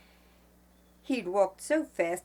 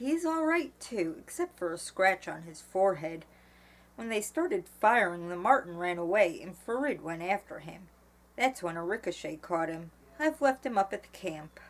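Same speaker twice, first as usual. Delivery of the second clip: ordinary delivery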